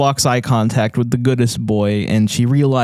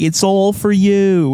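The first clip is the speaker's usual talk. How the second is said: put-on Boston accent, pitched up; 8 semitones higher than usual. Retelling a movie scene where the nanny calls down: imitating a Boston accent. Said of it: "this, like, Boston accent".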